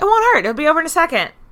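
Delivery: very high, loud mock reassuring jailer voice.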